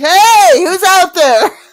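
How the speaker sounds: shrill, very loud, very high yelling out. In a role-play scene after a struggle, the character is yelling out. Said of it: "So you yell out".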